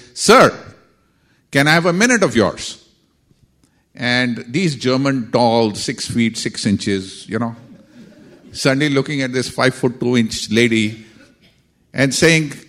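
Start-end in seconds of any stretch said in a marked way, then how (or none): 0.2-2.8 sudden booming, high-pitched call. Retelling how Rajni spoke up to tall men, in Rajni's booming voice. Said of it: "in a booming voice says".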